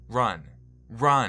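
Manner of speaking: very loud, high yell at the top of the lungs.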